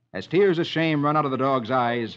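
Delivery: ordinary delivery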